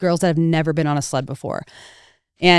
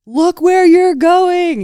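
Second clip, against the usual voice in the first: high, slow, drawn-out yell. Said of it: "And then I yell".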